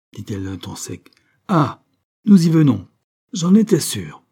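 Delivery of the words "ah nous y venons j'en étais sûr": high, loud, triumphant yet uneasy outcry. Narrator reads Madame Saint-Just replying to Marie, exclaiming, triumphant and anxious. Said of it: "s'écria Madame Saint-Just, à la fois triomphante et inquiète".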